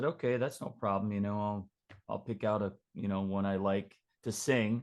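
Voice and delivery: ordinary talk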